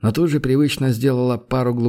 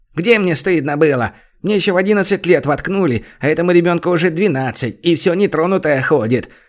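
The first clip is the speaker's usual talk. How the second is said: high, sharp, biting snapping voice; 5 semitones higher, 4 dB louder than usual. Reading a story, the hostess answers a caustic voice from the dark: snapping back. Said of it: "огрызнулась хозяйка".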